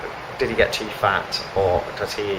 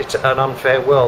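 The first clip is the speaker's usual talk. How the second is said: ordinary talk, nothing marked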